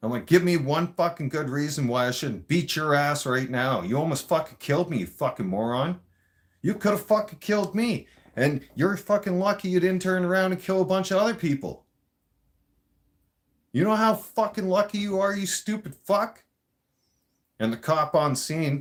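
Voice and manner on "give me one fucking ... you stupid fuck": put-on high, furious yelling. Recounting a road incident, the speaker replays what he yelled at the driver: retelling a furious yell. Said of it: "I was yelling at him".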